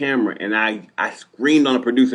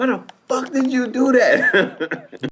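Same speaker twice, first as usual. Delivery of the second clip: put-on very high, very slow, drawn-out scream; 12 semitones higher than usual. Retelling a fight with the producer in a production van: imitating own past yelling. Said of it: "I'm screaming on her".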